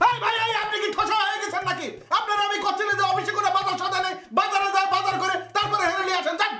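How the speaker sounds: loud yelling. In an office scene, one character yells at another: shouting. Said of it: "গলা নামান".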